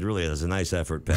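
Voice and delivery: plain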